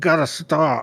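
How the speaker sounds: garbled, mashed full-mouth talk. Retelling what he said when he pulled the car over: imitating talking with a full mouth.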